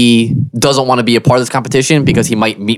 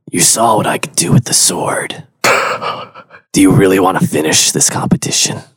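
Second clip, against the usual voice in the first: menacing whispered delivery; 4 semitones lower than usual. Playing a character leaning in to a rival at a competition: whisper. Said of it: "lean in and whisper in his ear".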